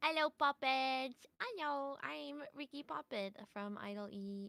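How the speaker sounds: cutesy idol-style, high little voice. Doing a cute little intro when asked to introduce self: cute little intro. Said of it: "do your cute little intro".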